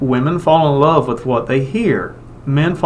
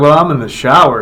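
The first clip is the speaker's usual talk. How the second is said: plain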